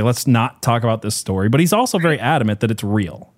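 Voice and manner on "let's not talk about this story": usual speaking voice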